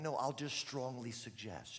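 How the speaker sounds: plain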